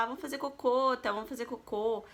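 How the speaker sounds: ordinary talk, nothing marked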